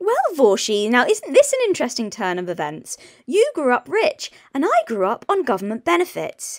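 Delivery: posh upper-crust British accent, swooping pitch. Addressing Vaushy in a clip a commentator reacts to, speaking in a posh voice. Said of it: "This posh bullshit is insufferable".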